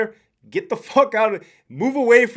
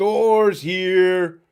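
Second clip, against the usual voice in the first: put-on ogre voice. Speaker greets chat viewers by name, then switches: ogre voice. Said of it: "In my best ogre voice".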